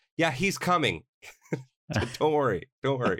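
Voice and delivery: high-pitched yelling with a reassuring tone. Retelling what the teacher said across the playground: imitating teacher yelling. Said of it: "she yells at me".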